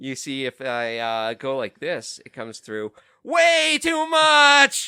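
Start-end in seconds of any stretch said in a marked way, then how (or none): 3.2-4.9 very high, very loud voice crack on much. On a podcast, showing the co-hosts how loud the mic gets, voice cracking. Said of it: "that just cracked".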